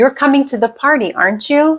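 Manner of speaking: pitch rising on aren't you, questioning lift. Teaching question tag intonation, rising intonation on the tag. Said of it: "Listen to this rising intonation".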